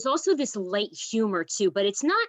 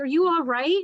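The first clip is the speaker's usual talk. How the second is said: mocking laugh, higher; 5 semitones higher, 4 dB louder than usual. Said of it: "the son is, like, laughing at him".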